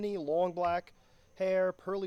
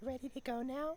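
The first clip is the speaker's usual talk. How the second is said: eerie stage half-whisper, pitched up; 6 semitones higher, 8 dB quieter than usual. Acting out a woman from a story asking if you're ready: imitating a creepy half-whisper. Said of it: "whispering it and smiling".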